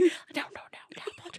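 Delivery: put-on whisper. Imitating the other speaker's warning about a name: imitating someone whispering. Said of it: "I like how you're whispering it to me".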